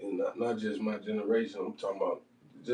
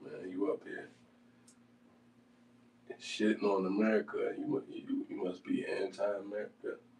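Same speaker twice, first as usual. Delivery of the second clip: ordinary talk, nothing marked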